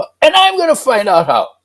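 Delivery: very high, loud, brash, cocky little voice. Retelling a memory from age six: imitating a cocky little voice. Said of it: "this little cocky voice says".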